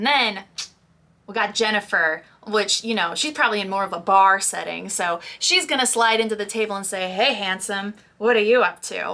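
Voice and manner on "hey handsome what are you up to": put-on flirty, come-on tone. Showing how a character greets someone at a bar: put-on flirty voice. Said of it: "it's said in a flirty way".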